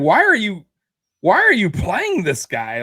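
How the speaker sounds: put-on scream. Retelling what he yelled about a player choice, retelling a scream. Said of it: "I was screaming".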